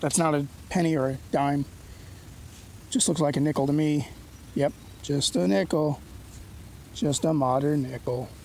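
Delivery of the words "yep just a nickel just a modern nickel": slow, glum, sad, drawn-out droning cartoon donkey voice. Speaker looks over a coin he just found: Eeyore impression. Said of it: "was that a good Eeyore impression".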